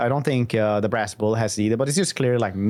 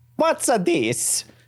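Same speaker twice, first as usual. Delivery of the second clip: very high, put-on Italian accent; 12 semitones higher than usual. Discussing game trait changes, slipping into a Mafia-game Italian accent. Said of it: "I'm gonna do that accent a lot because I just played through the um, the Mafia game and they ha- all have Italian accents".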